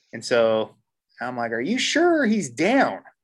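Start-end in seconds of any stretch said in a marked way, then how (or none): 1.5-2.9 play-acted very high, swooping, drawn-out yelling. Down in the creek, far from his friend, he retells a scream. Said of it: "we're screaming at this point".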